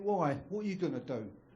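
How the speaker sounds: normal talking voice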